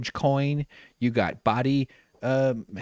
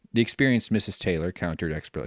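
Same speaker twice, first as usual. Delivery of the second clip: plain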